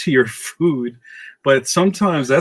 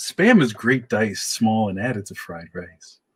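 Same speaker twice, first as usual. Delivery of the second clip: smooth public radio announcer voice; 2 semitones lower, 3 dB quieter than usual. Speaker says a line in the voice they keep for it: NPR voice. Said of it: "I use my N P R voice for that".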